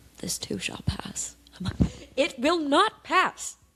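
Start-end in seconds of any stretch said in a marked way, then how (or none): 0.2-1.3 mock whisper, hushed, flat, expressionless deadpan. Retelling how someone answers them when they're at their lowest, mimicking a deadpan reply. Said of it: "looks me deadpan in the eyes and goes".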